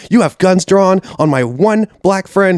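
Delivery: play-acted, frantic, freaked-out, high-pitched outburst. Retelling a friend arguing with police: imitating a friend freaking out. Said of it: "freaking out".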